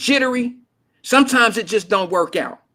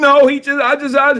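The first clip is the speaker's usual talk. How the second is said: high, slow, mock-frightened, broken-off stammer; 5 semitones higher, 5 dB louder than usual. Retelling a daughter's phone call after a traffic stop: imitating scared daughter. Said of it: "she was scared".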